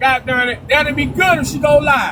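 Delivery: ordinary talk, nothing marked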